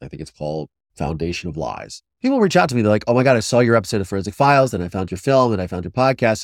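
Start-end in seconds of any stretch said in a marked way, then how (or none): none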